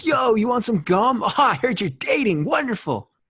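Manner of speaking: very high, loud, snooty, uppity bro voice. Talking about a character, the speaker voices Gum Guy as they pictured him: uppity. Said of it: "an uppity voice every time I read it".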